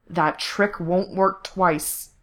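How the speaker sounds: threatening, menacing growled voice. Narrating a fight, a character grips his captive and speaks, growling. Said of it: "Corse growled".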